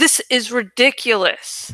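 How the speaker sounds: angry, annoyed. Reading a story aloud, a boy objecting to an unfair choice: angry.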